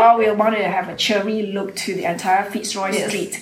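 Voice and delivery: ordinary talk, nothing marked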